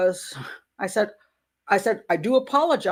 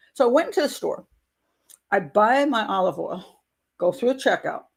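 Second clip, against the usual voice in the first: plain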